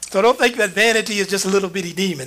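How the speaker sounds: ordinary talk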